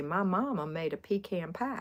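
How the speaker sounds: slow, put-on coastal Southern Georgia accent. Imitating how people on the coastal side said pecan: imitating a coastal Georgia accent. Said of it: "they talked in that accent".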